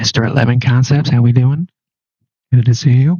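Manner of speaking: speaking in a hushed whisper. Greeting a guest while everyone else in the house is asleep, whispering. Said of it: "Because everybody in my house is asleep".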